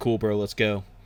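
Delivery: ordinary delivery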